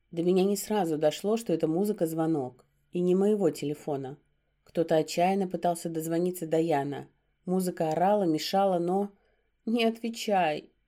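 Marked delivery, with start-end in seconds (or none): 9.7-10.6 groaning, moaned words. The narrator, clinging to the werewolf while his phone rings; moaning. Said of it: "простонала я".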